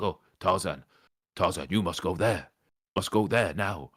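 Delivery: weird, strange talking-gorilla character voice. Retelling what a talking gorilla in the game said to the player, weird gorilla voice. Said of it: "it does all the weird voices".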